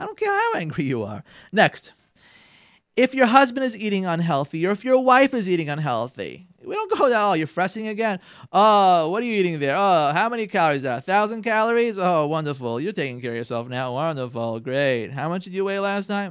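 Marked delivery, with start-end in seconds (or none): 7.1-16.3 acted, mimicked sarcastic tone. Advising couples, the speaker acts out a spouse commenting on a partner's eating: acting out sarcastic remarks. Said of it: "Get the sarcasm out of your house".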